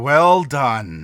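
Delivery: big, silky-smooth voice. Game master voicing a character speaking to the party, larger silky smooth voice. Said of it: "she says in a larger but still kind of silky smooth voice".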